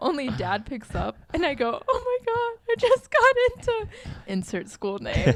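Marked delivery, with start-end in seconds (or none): 1.9-3.9 acted out, very high, crying out through tears. Retelling calling Dad after getting the email: imitating own crying. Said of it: "I immediately start crying".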